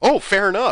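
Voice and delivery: loud, high, breezy and cheerful.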